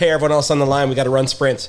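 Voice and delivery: ordinary delivery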